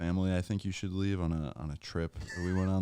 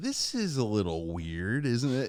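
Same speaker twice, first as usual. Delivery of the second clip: mock disapproving, judging tone, higher; 4 semitones higher than usual. Answering how the fiance said it, imitating a judging tone. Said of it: "or was it in a, "I'm gonna judge you" tone?".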